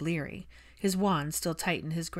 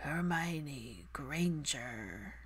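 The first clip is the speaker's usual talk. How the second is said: gargled, hoarse voice, much quieter; 8 dB quieter than usual. A bleeding man struggles to speak a woman's name; gargled, hoarse voice. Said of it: "gargled from the blood spilling out and hoarse from overuse".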